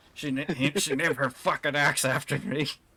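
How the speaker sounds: rapid muttering to oneself. Narrating the scene, voice a character's line, muttering. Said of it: "You do hear Lucius as he mutters".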